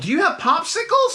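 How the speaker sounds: put-on very high, thrilled, excited child's shouting yell. Voicing a kid asking for popsicles: yelling as a kid. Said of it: "you yell".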